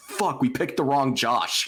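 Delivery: high, mock-angry, pissed-off blurted outburst. Retelling a friend's reaction to a draft pick: imitating angry outburst. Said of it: "she was so pissed".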